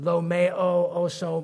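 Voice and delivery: very slow, terrible put-on Greek accent. A preacher offering to say it in the Greek, terrible Greek impersonation. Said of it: "That's a terrible Greek impersonation".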